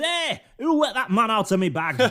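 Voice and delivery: screaming in outright fury, raging. Telling the story, Yorkshire Santa spots the regular Santa and screams in fury. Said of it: "screams in fury and says".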